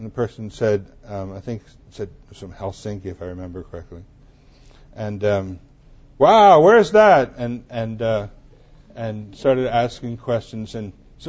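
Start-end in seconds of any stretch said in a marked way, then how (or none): 6.2-7.3 very loud, high, slow, obnoxious exclamation. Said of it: "very loud, very obnoxious voice say".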